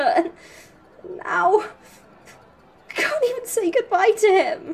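tearful. A character who cannot say goodbye to Phoenix, crying. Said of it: "don't cry".

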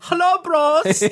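put-on, very high-pitched, effeminate German accent. Trying out a silly German bro voice for the group, high effeminate German voice. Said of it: "really high effeminate German".

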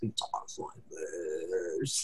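very deep, very low, slow, creepy voice. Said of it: "He has a very deep voice".

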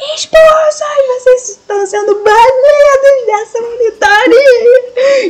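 big acted enraged yell, very high-pitched. Retelling how the teacher reacted: imitating a teacher's angry shout. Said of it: "ele só deu um gritão".

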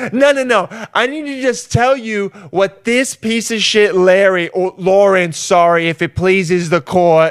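slow, put-on New Jersey accent. Speaker acting out someone ranting to a small claims judge, put-on New Jersey accent. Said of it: "you're you're from Jersey".

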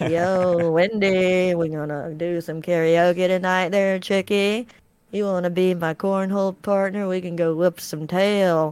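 calm friendly voice. Imitating a tall friend who has the Bob Ross gene: imitating Lee's Bob Ross-like voice. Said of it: "he kinda talks like this".

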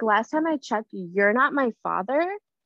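ordinary delivery

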